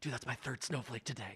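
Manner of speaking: very quiet, pumped whisper said aside. Retelling what a student said to a friend while walking out: imitating a whisper. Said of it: "he whispered to his friend".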